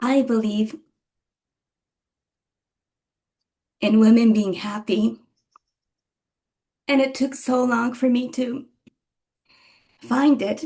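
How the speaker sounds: emotional, choked up, on the verge of tears. Answering a question about anything else to share, emotional, on the verge of tears. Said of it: "I'm a little bit vulnerable right now".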